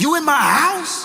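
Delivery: threatening and menacing, very high-pitched voice. Retelling a phone call after rushing home: imitating an angry bass voice. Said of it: "Bass in voice, ready to beat somebody down".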